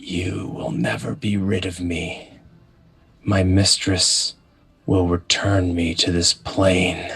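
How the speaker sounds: whispering voice. Voicing a battered newcomer that cannot speak, heard in the listeners' heads: whispering voice. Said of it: "you hear a whispering voice in your head as it says".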